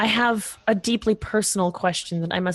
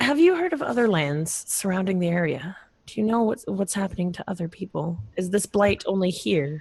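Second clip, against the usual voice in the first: discreet, private, confiding tone. Player's character goes over to him for a private conversation: hushed tone. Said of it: "in a hushed tone say".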